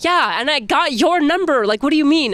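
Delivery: exasperated tone.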